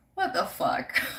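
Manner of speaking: mock baffled, stunned, incredulous disbelief. Retelling seeing someone trying to get into the house: retelling disbelief. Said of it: "in disbelief".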